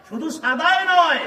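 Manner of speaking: high, loud, fervent preaching cry.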